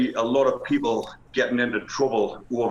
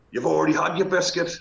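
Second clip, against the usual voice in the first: put-on high, rough shout; 5 semitones higher than usual. Retelling a row in a prison dinner queue: imitating a shout. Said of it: "the bloke shouts back at him".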